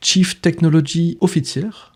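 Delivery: English accent put on for show. A show host giving the guest's English job title, in an English accent. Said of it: "mon bel accent anglais".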